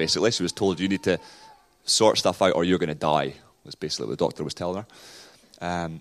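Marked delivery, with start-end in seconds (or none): none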